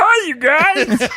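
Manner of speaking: shrill, very high-pitched, loud voice. Answering a friend's claim of a comedian impression: Bobcat Goldthwait impression. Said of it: "[name]'s Bobcat Goldthwait".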